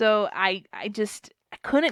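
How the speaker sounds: ordinary delivery, nothing marked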